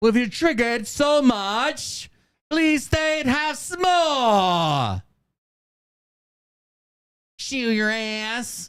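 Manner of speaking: weird put-on Australian accent, hard to identify. Repeating their own line, then asking what accent it was, unidentified put-on accent. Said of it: "What the fuck accent was that?".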